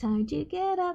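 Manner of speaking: slow, drawn-out, high-pitched half-whisper. Voicing a character crouched in the snow, speaking to it: slow half-whisper. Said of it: "she is slowly whispering to the snow".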